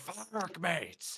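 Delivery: half-shouted, mild yelling. Voicing a character who flies into a fight on a ship: yelling.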